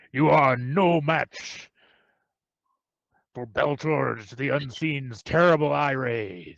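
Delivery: grand, declaiming monster voice. Game master voicing an unseen creature speaking to the players, in a booming voice. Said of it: "in a booming voice".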